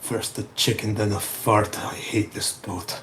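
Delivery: very low, muttered grumble under the breath. Standing up in character after a fall: muttering under breath. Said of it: "I will just mutter under my breath".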